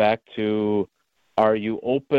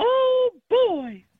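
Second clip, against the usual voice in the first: pitch way up, cartoon-style voice. Joking with co-hosts about doing impressions: Mickey Mouse voice. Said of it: "as Mickey Mouse would say".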